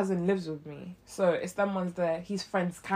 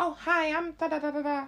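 put-on squeaky voice, much higher, slower; 9 semitones higher than usual. Retelling how a man's friend introduced themself, in a squeaky voice. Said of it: "I don't mean to give him a squeaky voice".

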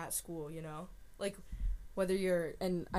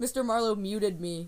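ordinary talk, nothing marked

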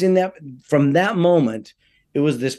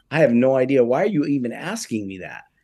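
ordinary talk

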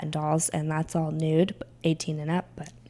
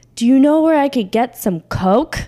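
very loud, pitched-up, blurted delivery; 8 semitones higher, 10 dB louder than usual. Recounting someone who came up to the stage and put a dollar down; retelling a loud question. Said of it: "they kind of loudly said".

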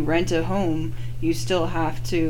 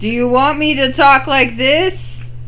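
very loud, high, booming raised voice; 8 semitones higher, 9 dB louder than usual. After being told they're talking really low, very loud. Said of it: "I am so sorry for any".

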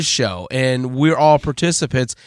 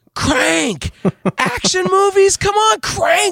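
mock very high, all-out, full-lung shriek. Retelling listening to a show talk about movies, the speaker acts out screaming. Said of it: "I was screaming at the top of my lungs".

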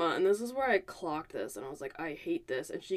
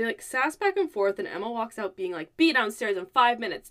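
ordinary talk

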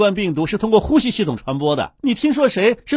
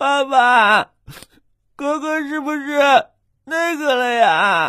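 sobbing, tearful crying; 5 semitones higher than usual. In a family skit, a child asks Dad about big brother, crying. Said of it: "别哭了，".

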